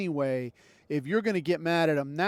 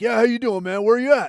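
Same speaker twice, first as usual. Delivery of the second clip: put-on drunk man voice, higher and louder; 6 semitones higher, 9 dB louder than usual. Retelling a meeting with an old coworker: imitating a drunk man. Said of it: "he's already fucked up".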